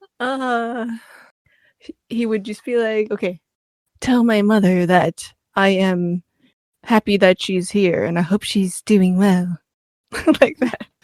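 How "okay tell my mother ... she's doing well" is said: husky, lowered cartoon girl voice. Showing how a male character would talk: cartoon girl voice done lower. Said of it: "cartoon girl voice done lower".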